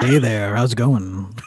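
mock seductive voice. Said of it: "I can't let my neighbors hear my sexy voice".

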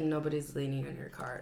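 low, quiet, mumbled line. Retelling how the speaker's sister mumbled to a car owner, imitating a mumble. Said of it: "she kind of like mumbled".

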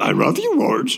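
very high cartoon dog voice. Imitating the van that sounded like the Jetsons' dog, Astro: Jetsons' dog Astro voice. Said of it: "he sounded like the Jetsons' dog".

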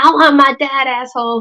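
angry, slow and stretched. Retelling how she answered his offer of money: mock-angry retort. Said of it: "she's like all angry".

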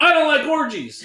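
full-throated, shrill, very high, very loud top-of-lungs scream. Telling a story about couples in a room, retelling a woman's yell at top of lungs. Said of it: "Sabrina yells at the top of her lungs".

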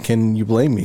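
ordinary talk

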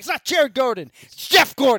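very loud shout, high and swooping. Retelling yelling a name correction at the screen: retelling a yell. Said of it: "And I yelled on the screen".

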